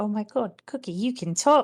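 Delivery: loud, thrilled, overjoyed, delighted exclamation. Voicing Bella in a game as the dog starts to talk, Bella so happy. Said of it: "Bella's so happy".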